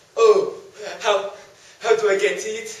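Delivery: slow, drawn-out storybook talking tree voice. A storyteller voices the tree answering the man who came back; talking tree voice. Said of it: "And by this lake was one solitary tree. He decided to prop up for a rest when all of a sudden, hello there, I'm the tree. / [name]?".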